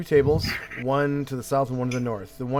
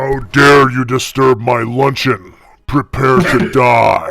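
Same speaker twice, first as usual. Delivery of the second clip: low, deep, rumbling creature voice; 14 dB louder than usual. Narrating a mind flayer that stands up and speaks to you, deep rumbling voice. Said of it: "it says in a deep, rumbling voice".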